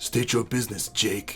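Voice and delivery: deep, hushed, cross put-on voice. Doing his impression of someone's line, in a deep, mock-angry put-on voice. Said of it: "it's like a deeper Dave, and a little bit more angry".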